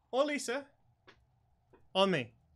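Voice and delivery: grand, showy showman's voice, high and loud.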